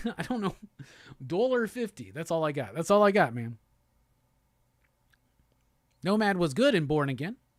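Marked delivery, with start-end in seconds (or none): 1.2-2.1 Russian accent, pitched up. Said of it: "I can only do a Russian accent saying".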